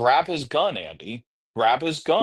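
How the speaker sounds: plain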